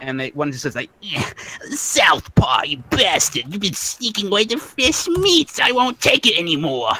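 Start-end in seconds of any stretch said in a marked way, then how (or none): 1.0-6.9 put-on squeaky, swooping rat voice with Brooklyn accent. Game narrator voices one of three squabbling rat creatures, squeaky Brooklyn rat voice. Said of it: "they got a Brooklyn accent".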